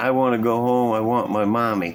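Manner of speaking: ordinary talk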